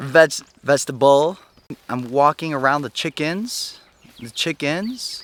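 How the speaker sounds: questioning lilt rising at every phrase end. Demonstrating a speech habit to avoid: Kim Kardashian uptalk. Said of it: "see how it goes up at the end?".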